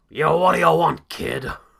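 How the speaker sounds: very loud, rough, raspy tough-guy voice. Answering a request for a best wrestling imitation: Vince McMahon voice. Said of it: "I can do an okay Vince McMahon Junior".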